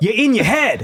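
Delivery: yelling. Retelling how a caller started yelling at the speaker: imitating someone yelling. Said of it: "he starts yelling at me".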